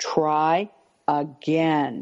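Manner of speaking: dropped a register, low, slow, deliberate, drawn-out words. Showing a parent how to answer a disrespectful child: low, slow voice. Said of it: "take your voice down a register and really slow down the words".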